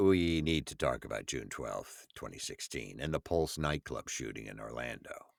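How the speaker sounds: low, soft somber tone.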